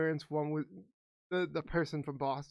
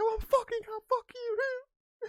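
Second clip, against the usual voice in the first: put-on angry actor voice, higher and louder; 5 dB louder than usual. Quoting a movie scene with Mark Wahlberg: imitating Mark Wahlberg. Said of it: "it's like".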